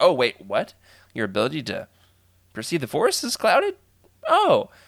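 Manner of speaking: feigned, put-on surprise.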